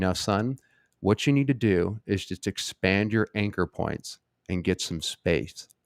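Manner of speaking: acted calm, deliberate tone. Retelling a dad's reply to a plea for money, imitating a very calm tone. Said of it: "in a very calm tone".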